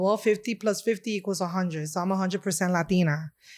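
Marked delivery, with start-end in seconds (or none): none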